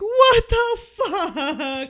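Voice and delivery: squealing, very high whine with "fuck" stretched long. Retelling going home after a great date: imitating own whining. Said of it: "I'm, like, whining".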